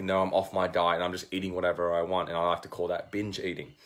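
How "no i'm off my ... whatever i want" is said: ordinary talk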